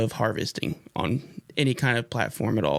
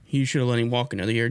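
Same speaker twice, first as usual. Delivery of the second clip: plain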